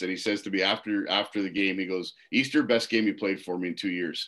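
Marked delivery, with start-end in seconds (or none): 2.3-4.3 put-on deadpan, dead serious delivery. Retelling what the coach said after the game: imitating someone dead serious. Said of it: "dead nut serious".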